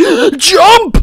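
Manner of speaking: very loud, very high, forceful, emphatic yell. In a game where the word needs emphasis: shouted with emphasis on jump. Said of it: "you have to put emphasis between it too, like".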